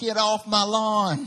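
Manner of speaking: put-on very slow Southern US accent. Acting out a North Carolina lawn owner shouting off visitors, in a Southern US accent. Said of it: "It's my southern accent".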